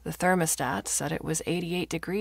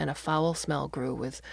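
ordinary delivery

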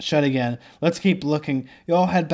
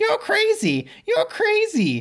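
very high, swooping, squawking parrot voice. Reading a story where a parrot mocks the hero back, squawking parrot voice. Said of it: "The parrot squawks".

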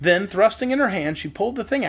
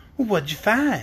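curious, inquisitive. Narrator voicing a girl questioning a hen, curious. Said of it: "inquired the girl, curiously".

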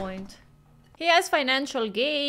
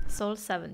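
ordinary delivery

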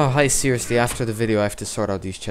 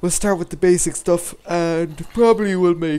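speaking mid-yawn, higher and louder; 6 semitones higher, 4 dB louder than usual. Wrapping up a video and telling viewers about the next episode, yawning while talking. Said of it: "sorry, I'm yawning".

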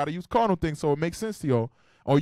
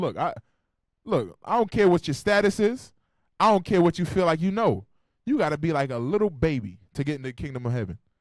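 ordinary talk

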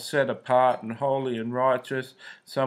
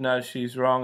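ordinary talk

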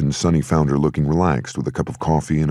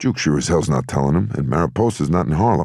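usual speaking voice

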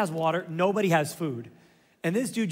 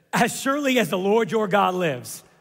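full of attitude, answering back; 4 dB louder than usual. Reading a widow's reply to a prophet, imitating her attitude. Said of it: "Can you hear the attitude in her voice?".

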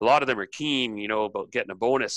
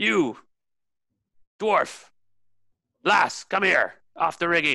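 high, bellowing, barking ship captain voice; 7 semitones higher than usual. As the captain, order the dwarf lass down off the rigging in a captain's bellow. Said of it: "The captain bellows you down".

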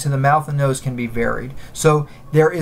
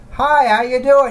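bright, raised-larynx voice, pitched up; 9 semitones higher, 4 dB louder than usual. Explaining larynx position, demonstrating a bright high-larynx voice. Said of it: "You kind of have this kind of bright voice".

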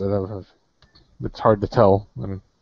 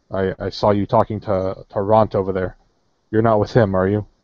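ordinary talk

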